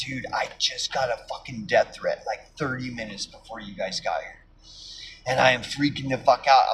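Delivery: low, hushed murmur with voice kept down. Retelling what they said to the cop once she walked away: low voice. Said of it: "talking to the cop like in a low voice".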